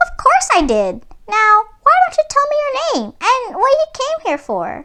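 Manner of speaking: small, squeaky, very high-pitched mouse voice. Narrator reads a little mouse replying to the story's hero, tiny mouse voice. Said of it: "but the only living thing in sight was a little mouse on a table. / she said, / came a tiny voice".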